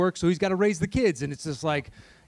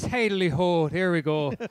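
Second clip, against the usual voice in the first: bad stock Irish accent; 2 semitones higher than usual. Speaker warms up to get into an irish headspace, bad stereotypical irish accent. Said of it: "Now I'm doing a bad".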